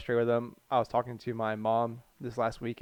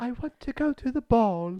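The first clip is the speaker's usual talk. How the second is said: very high, breathy put-on princess voice; 12 semitones higher, 4 dB louder than usual. Mocking the breathy narrator of a book on Elizabeth of York, mock Disney princess voice. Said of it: "sounds like like a Disney old Disney princess".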